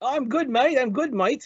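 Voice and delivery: poor British accent drifting Australian. Host greeting his friend David from the UK, in a bad British accent. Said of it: "that was actually bad, a bad uh, accent. That more more like Australian".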